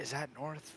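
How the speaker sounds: hushed, acted half-whisper, said as an aside. Playing a character who half-whispers a question to another character: half-whispering in character. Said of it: "I'm gonna whisper into Honey Citrus".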